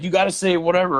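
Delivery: mock high-pitched yell. Retelling a friend's call during a haunted attraction, imitating a friend yelling. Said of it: "starts yelling".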